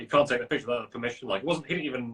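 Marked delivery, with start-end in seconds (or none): none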